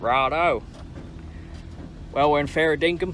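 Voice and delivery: put-on, attempted Australian accent. Speaker tries out an accent while chatting with a friend: Aussie accent. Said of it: "I'm trying an Aussie accent".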